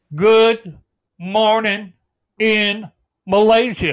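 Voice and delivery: slow, word-by-word delivery. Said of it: "if you talk real slow".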